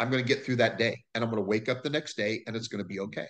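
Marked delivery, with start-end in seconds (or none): none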